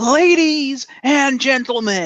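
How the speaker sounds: faint, high voice heard from a distance. Recalling Paul Heyman's introduction, the speaker does his faint voice. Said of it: "you just hear this faint voice go".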